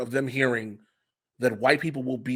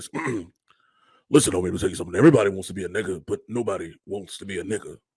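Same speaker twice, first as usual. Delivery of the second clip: deep, lowered, drawling voice; 5 semitones lower than usual. Showing the other speaker how it's really done, Paul Mooney impression. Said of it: "This is how you do it".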